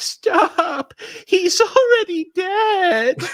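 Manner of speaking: put-on drawn-out, very high, slow sobbing child voice. Retelling a Simpsons bit where the mascot gets beaten: imitating The Simpsons' crying little boy. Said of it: "in the voice of the little kid from The Simpsons".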